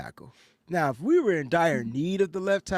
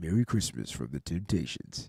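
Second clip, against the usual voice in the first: put-on baritone, much lower, quieter; 10 semitones lower, 5 dB quieter than usual. Telling Mike how he would sound, imitating Mike's baritone. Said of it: "Mike is a baritone".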